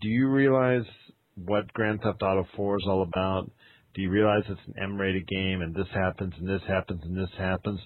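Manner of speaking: ordinary talk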